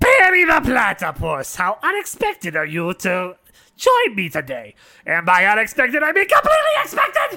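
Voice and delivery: animated, high, swooping cartoon villain voice. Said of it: "Can you do the Dirt Dur- impression?".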